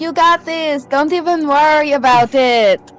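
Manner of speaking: loud cheering yell. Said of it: "and I'm just like".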